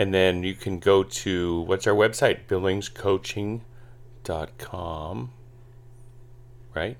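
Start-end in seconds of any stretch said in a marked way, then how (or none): 2.5-5.3 oddly pronounced, slow, drawn out, fading away. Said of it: "Why are you saying it like".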